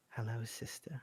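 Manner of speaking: small, tiny voice. Voicing an unseen speaker greeting a sister: small voice. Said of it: "you suddenly hear a small voice say".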